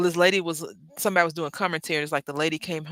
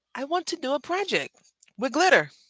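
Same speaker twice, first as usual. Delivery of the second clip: very high, swooping put-on British kid accent; 10 semitones higher than usual. Retelling a cartoon scene, quoting the kids: put-on British accent. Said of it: "in their, uh, British accent".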